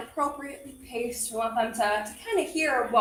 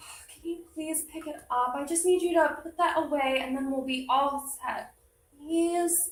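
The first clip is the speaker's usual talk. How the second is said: pleading, almost begging, a touch sad; 4 semitones higher than usual. Showing a poor way to give a child directions: pleading, a little sad. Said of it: "pleading almost, a little bit sad".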